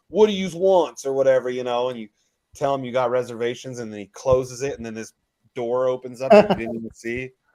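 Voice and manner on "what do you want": put-on old mobster voice, pitched high. Retelling a Vegas speakeasy doorman's greeting: old mobster voice. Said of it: "he sounds like an old mobster".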